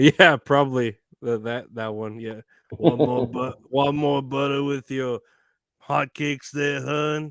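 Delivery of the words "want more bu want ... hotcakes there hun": put-on raspy, smoky diner waitress voice. Imitating a Waffle House waitress offering butter: raspy smoky waitress voice. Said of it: "a Waffle House waitress".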